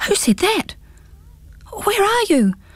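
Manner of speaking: high, puzzled, bewildered gasping. Startled by an unseen voice in the grass, a character jumps up, gasping in bewilderment. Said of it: "gasped Pins, jumping up and staring about in bewilderment".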